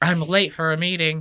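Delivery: mocking preppy guy voice. Imitating Brian asking for the manager, as a guy in a boating outfit. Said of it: "that's what Brian sounds like".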